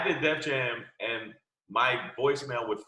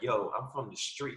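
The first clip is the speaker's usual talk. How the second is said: mock seductive voice, quieter; 5 dB quieter than usual. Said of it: "why you trying to talk to me all sexy?".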